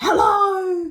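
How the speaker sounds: high, stretched-out, drawn-out shout. Retelling a man in the queue behind you who yells out, imitating someone yelling hello. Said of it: "he yells out".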